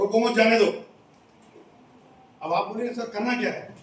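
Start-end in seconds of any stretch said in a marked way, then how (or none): 0.0-0.7 loud, unbroken, straight through, no pause after रोको. Showing an ambiguous Hindi phrase said without breaks: no pause after रोको or मत. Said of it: "ना मैं कहीं रुका, कहीं एक सेकंड का भी पॉज दिया क्या मैंने?".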